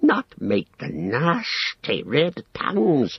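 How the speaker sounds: high creature hiss with wild swoops. Reading Gollum answering Sam's question, hissing Gollum voice. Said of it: "hissed Gollum".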